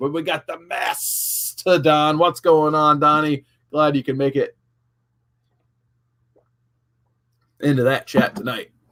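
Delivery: slightly gravelly voice. Streamer greeting a viewer who just joined the chat, slightly gravelly voice. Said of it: "my voice is still a little gravelly".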